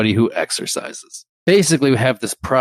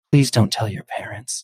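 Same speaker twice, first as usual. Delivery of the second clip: flustered, embarrassed, pleading voice. Retelling what a woman said right after blurting something out; more quiet voice. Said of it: "in a more quiet voice goes".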